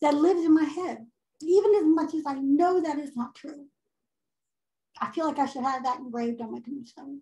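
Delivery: tearful voice, fighting back tears through the words. Talking about a painful memory of a parent, tearful, holding back tears. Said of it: "sorry for the tears".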